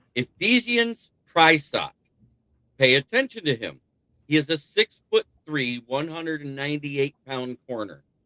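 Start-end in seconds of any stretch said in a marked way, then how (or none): 0.2-1.9 slow, careful, syllable-by-syllable pronunciation, pitched up. Speaker introducing a defensive back from Washington by name, said slowly. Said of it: "I have to say it slowly".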